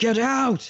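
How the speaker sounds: very high, frightened, scared shout. Describing the voice heard in the red house, imitating a frightened shout. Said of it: "shouted like that says".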